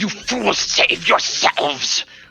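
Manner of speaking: very high, raspy whisper, not his own voice. A game master voices a struck figure reeling back, in a raspy whisper. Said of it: "he whispers out in like a raspy voice that is not his own".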